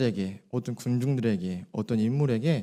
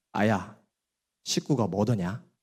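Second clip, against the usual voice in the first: regional Korean dialect. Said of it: "제가 한번 사투리를 연습해 봤어요".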